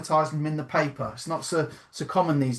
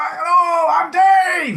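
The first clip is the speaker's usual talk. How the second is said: put-on booming, high-pitched, belted-out northern accent; 9 dB louder than usual. Imitating a millionaire from up north introducing himself: Dave Fishwick impression. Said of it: "He's like that".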